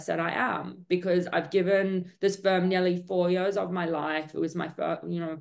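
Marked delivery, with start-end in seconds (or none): none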